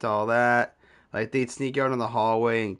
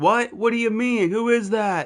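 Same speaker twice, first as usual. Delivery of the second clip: put-on very high, raised shouting; 10 semitones higher, 4 dB louder than usual. Retelling how the girl's mom reacted on the phone: imitating someone yelling. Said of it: "I hear her mom yelling".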